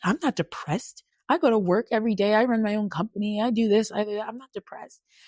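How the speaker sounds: heated, indignant, offended, angry tone. Retelling answering a doctor's diagnosis: imitating own angry protest. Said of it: "I got so mad at her".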